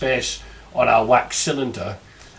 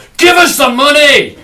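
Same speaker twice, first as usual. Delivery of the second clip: put-on slow, bellowing Scottish accent; 14 semitones higher, 12 dB louder than usual. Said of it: "do my impression of [name]".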